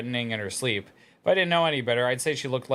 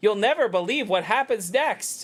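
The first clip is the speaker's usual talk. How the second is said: put-on annoying, pitched-up text-to-speech app-narrator girl voice; 9 semitones higher, 3 dB louder than usual. Answering chat about a caption, imitating the TikTok girl voice. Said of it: "that's the annoying girl voice".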